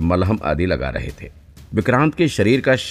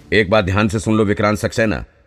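usual speaking voice

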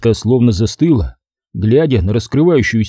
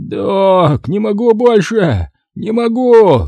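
high, very slow half scream, half wheeze; 9 semitones higher than usual. A patient under surgery cries out to the doctor, half scream, half wheeze. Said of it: "то ли закричал, то ли захрипел оперируемый".

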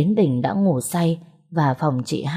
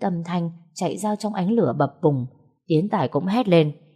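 plain reading voice

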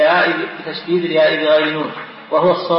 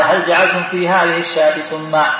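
ordinary talk

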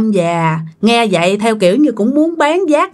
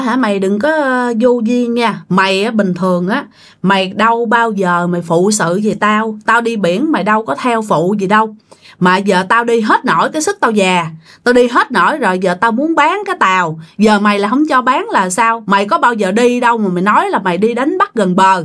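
ordinary talk

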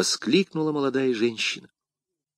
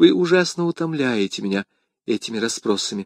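plain

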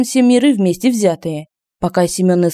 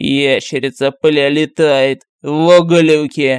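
put-on low, slow, tipsy, drunken voice; 4 semitones lower than usual. Someone on the floor above calls out after blowing his nose, in a drunken voice. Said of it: "сказал пьяным голосом".

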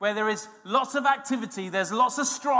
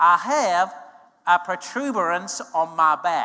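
put-on slow, careful American-accented speech; 4 semitones lower, 3 dB louder than usual. Quoting a man at a service in america, in an american accent. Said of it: "That's an American accent".

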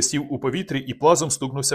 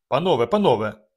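usual speaking voice

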